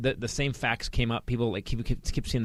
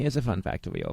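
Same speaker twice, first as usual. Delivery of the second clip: put-on German-accented delivery. Telling a fun fact to another speaker, in an impression of a German accent. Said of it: "I was doing my impression of Germans".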